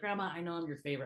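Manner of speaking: mock whisper. Retelling what was said to a dying grandma: imitating own whisper. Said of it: "I actually whispered it to her".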